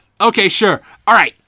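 ordinary talk, nothing marked

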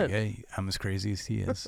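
normal talking voice

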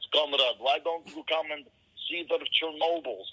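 bad, fake put-on Russian accent. Mocking how actors under another director would fake it, shitty Russian accent. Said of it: "people pretending to be Russian with shitty Russian accents".

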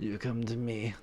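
very quiet, softly murmured mob-boss voice. Talking about The Godfather with someone, do a Marlon Brando Godfather impression. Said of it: "Marlon Brando".

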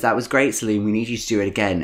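normal talking voice

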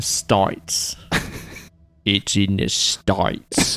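whispered, breathy Australian accent, States said with an i. Trying out how Australians say a word, in an Australian accent. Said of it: "that works, actually".

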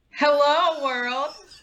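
bright, smiling tone. A co-host redoes her greeting after the host asks for a smile in her voice. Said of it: "I wanted that smile to come through in your voice".

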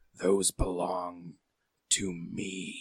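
thick, soft, gurgling creature voice. Voicing a creature that turns to another character, thick, gurgly voice. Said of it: "He's going to say in a thick, gurgly voice".

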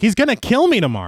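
high, frantic, panicky blurt, acted out. Recapping a story's scene, imitating Kemp's frantic panic. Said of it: "Kemp is all frantic because he's like".

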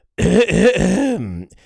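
very posh English accent. Showing how the words should be said: very snooty English accent. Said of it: "You have to say it like a very snooty English person".

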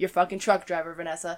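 muttered, mock exasperated, annoyed tone. Retelling throwing up hands after eye contact with Vanessa, retelling own pissed-off remark. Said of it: "She sees me being all sorts of pissed off".

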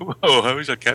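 normal talking voice

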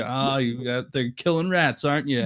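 put-on teasing voice. Imitating the stepdad teasing Michael about killing rats: imitating someone teasing. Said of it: "he's just sort of teasing him about it".

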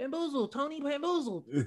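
very high-pitched Sicilian voice. Joking about the 1950s, doing a high-pitched Sicilian voice. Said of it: "the high pitched Sicilians".

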